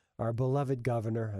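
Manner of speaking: ordinary talk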